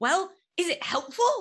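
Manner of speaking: very high, put-on British accent. Retelling a man's question to her, in a British accent. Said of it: "he has a British accent".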